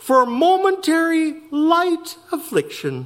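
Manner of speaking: slight lilt, lightly sing-song. Reading a passage aloud, he says one odd phrase with a little lilt. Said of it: "with a little lilt in my voice".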